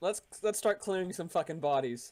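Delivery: ordinary talk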